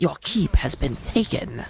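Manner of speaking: deep voice dropped very low. Quoting a favorite game announcer voice line: John Delaney voice. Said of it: "I can't do a John Delaney voice very well".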